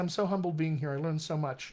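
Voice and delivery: ordinary talk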